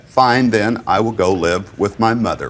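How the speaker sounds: normal talking voice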